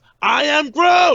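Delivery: little creature voice, very high, very loud yell. Retelling a favorite movie scene to a friend, imitating Baby Groot shouting. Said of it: "Baby Groot is shouting".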